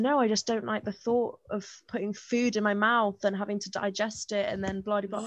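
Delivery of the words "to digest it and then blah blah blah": normal talking voice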